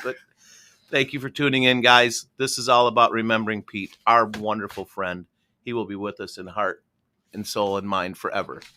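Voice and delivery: voice welling up with tears, teary, choking up. Closing a show remembering a late friend, thanking listeners, a little teary-eyed. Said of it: "I'm getting a little teary eyed".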